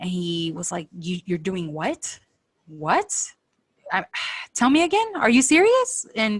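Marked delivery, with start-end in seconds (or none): 1.0-6.1 mock pissed-off, defensive outburst, swooping and climbing pitch. Retelling how a man reacted to the mom's plan, mock-angry outburst. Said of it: "He got pissed off very quickly".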